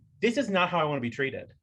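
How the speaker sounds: ordinary delivery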